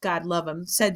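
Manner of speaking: ordinary talk, nothing marked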